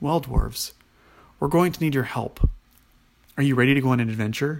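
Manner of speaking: plain reading voice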